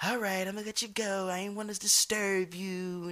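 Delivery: soft, mock patronizing, condescending tone. Retelling what someone said after being told to calm down: mock-condescending tone. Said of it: "you get the whole condescending speech of".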